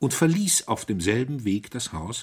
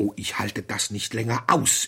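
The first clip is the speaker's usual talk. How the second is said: plain reading voice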